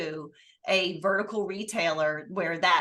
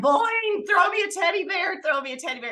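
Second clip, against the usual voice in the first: very high-pitched yelling; 12 semitones higher, 4 dB louder than usual. Retelling calling to a colleague from the podium: retelling a yell. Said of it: "yelling down".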